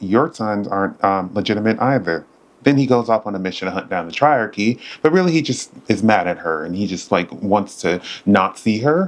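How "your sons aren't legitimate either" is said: ordinary talk, nothing marked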